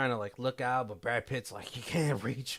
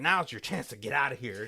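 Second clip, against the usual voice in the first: mock yelled, loud shouted line, voice raised; 4 dB louder than usual. Retelling a film scene where one character shouts to another: imitating someone yelling. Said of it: "he's yelling at James".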